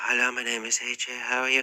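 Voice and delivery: soft, hushed half-whisper, barely audible. Showing listeners how not to practice speaking out loud: half-whispering. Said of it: "don't whisper. Don't say".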